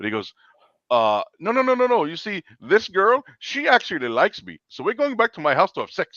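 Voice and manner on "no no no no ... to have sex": put-on Indian accent, pitched very high. Speaker retells what a man told them, in an Indian accent. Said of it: "I'm gonna do an Indian voice".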